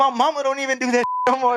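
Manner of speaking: put-on angry, fed-up, pissed-off tone. Retelling confronting someone who hit them with a belt: imitating own angry retort. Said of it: "I was pissed".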